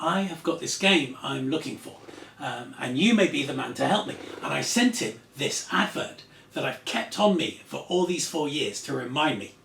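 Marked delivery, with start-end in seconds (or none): none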